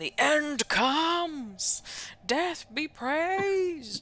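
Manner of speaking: loud screams. Game master voicing cultists during a fight, screaming cultists. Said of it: "the cultists are still screaming".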